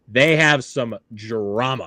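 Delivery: "drama" emphasized and drawn out.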